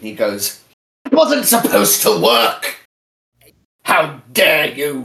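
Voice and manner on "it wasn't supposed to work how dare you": enraged, loud, furious screaming outburst. Voicing a defeated armored villain cursing the players: screaming in rage. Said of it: "He curses and he screams at you".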